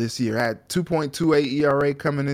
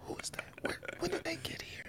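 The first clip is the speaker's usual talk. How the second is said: put-on whisper, higher and quieter; 19 dB quieter than usual. Acting out asking about new hires after coming back from vacation: imitating a whisper.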